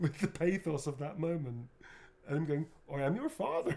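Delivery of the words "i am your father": put-on West Country burr, pitched very high. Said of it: "he was from the West Country".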